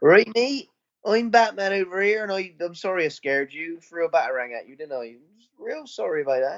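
put-on Bristol accent. Suggesting he should play Batman in full Bristol, the speaker does Bristol-accent Batman. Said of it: "he should put on when you go full Bristol".

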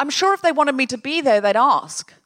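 unbothered, matter-of-fact, not hurt. Wife imitates how her husband would react to not being invited; imitating husband, matter-of-fact. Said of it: "not hurt, just like, fact".

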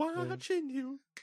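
mock creepy singsong, very high and slow.

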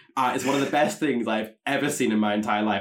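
normal talking voice

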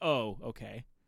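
let-down, disappointed tone. Retelling a police officer's reply after a late-night stop: imitating a disappointed cop. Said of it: "he sounded disappointed when he's like".

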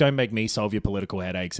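ordinary delivery

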